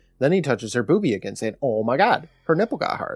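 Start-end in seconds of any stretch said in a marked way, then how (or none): none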